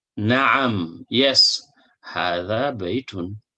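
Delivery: ordinary talk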